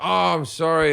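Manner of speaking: put-on polished, well-to-do, posh upper-class accent. Retelling a lad's reply to security after climbing the Windsor Castle wall, posh voice. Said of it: "And he can speak quite posh".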